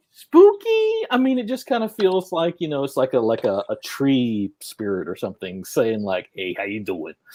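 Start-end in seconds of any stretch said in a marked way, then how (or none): 6.3-7.1 fake Italian-accented voice. Voicing a spooky tree spirit saying hello: put-on italian accent. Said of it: "I don't know why they suddenly got Italian".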